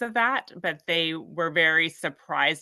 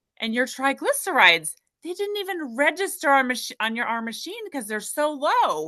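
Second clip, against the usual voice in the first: mock amazed, surprised voice, pitched much higher; 9 semitones higher than usual. Retelling what the nurse said about the lab results, imitating a nurse's amazement. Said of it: "You could hear it in the nurse's voice".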